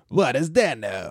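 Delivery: put-on old-fashioned movie trailer announcer voice. Suggesting an old-timey trailer for the show, old-timey trailer announcer voice. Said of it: "We should do an old timey one".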